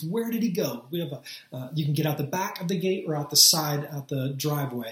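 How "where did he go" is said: mock frantic, anxious, urgent delivery. Recalling their toddler son going missing, the speaker retells yelling at their kids. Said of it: "I'm yelling at my kids".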